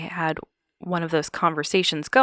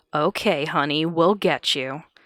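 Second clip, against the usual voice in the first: put-on drunken, mocking voice. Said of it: "a man's very drunken voice respond mockingly".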